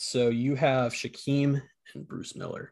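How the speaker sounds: slow, drawn-out, spelled letter by letter. Saying the picks aloud while typing them down: slow voice. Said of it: "saying that out loud in that slow voice".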